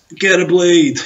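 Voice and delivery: loud play-acted shout. Retelling how a man shouted up to the house: imitating a man shouting. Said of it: "he just shouted up to the house".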